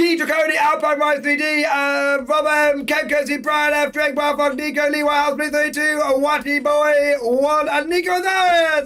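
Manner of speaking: rattled off without breathing. Reading out a long roll call of viewer names, all in one breath. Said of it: "I'm trying to do it all in one breath".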